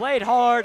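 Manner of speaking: loud, high, excited shout.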